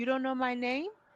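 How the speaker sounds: quiet, soft, direct and straightforward delivery. Imitating how Stacey delivers a comeback: imitating a quiet, direct comeback. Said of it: "her comebacks have been really very quiet".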